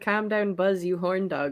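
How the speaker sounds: flat, level, passionless monotone. Retelling how the guy who made the video said a line: imitating passionless delivery. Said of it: "he just said it with no passion".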